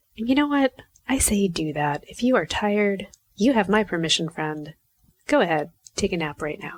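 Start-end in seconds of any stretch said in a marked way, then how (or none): 5.3-6.8 firm, authoritative, commanding tone. Speaker giving a tired listener permission to take a nap, commanding. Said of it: "That sounded so commanding".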